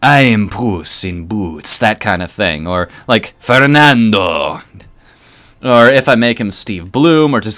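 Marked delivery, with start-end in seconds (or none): 0.0-1.8 slower, seductive character voice. Trying out voices for a character, sampling a sexy Puss in Boots voice. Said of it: "give him a sexy".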